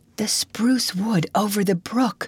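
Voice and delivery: whispering. Reading a story aloud, Anne answers Marilla's question, in a whisper. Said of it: "said Anne in a whisper".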